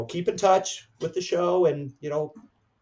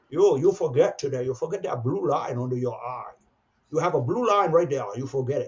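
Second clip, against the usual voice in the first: put-on German accent, direct and insistent tone. Retelling what Lou said after calling the speaker over: imitating Lou's German accent. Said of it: "He never lost his German accent".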